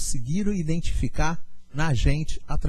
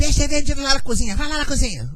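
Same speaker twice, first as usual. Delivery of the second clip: mock-contemptuous, dismissive voice, pitched much higher; 11 semitones higher, 4 dB louder than usual. Retelling what the restaurant owner told her, imitating the owner's contemptuous reply. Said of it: "Assim mesmo que ela falou comigo".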